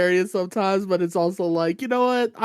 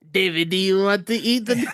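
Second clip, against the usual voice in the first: heavy, thick, put-on Italian accent. Describing a woman from an italian family, the speaker quotes her in a thick italian accent imitation. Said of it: "thick straight Italian off the accent".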